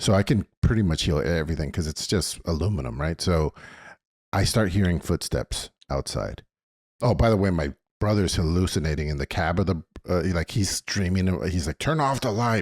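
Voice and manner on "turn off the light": mock high, half-asleep, dream-addled shout. Retelling a brother yelling in his sleep at the moon: imitating someone yelling. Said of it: "but he's yelling at the moon".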